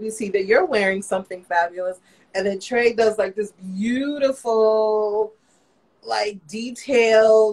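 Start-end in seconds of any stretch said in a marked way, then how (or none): none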